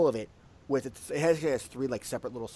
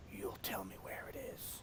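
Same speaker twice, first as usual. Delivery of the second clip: whispered dragon creature voice; 5 semitones lower, 18 dB quieter than usual. Game master voicing the dragon to a player outside their house, dragon voice. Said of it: "the dragon kind of looks and goes".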